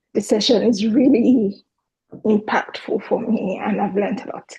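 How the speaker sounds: teary, emotional voice welling with tears. Asking a question after a session that moved them, teary. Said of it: "sorry, I'm very teary".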